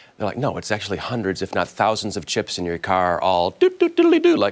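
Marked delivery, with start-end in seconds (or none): 3.5-4.4 shrill, very high, loud robot beeps and chirps. Speaker describing car chips talking to each other, doing an R2-D2 impression. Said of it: "that's my R two D two impression".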